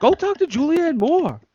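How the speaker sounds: high, pompous, put-on movie star voice.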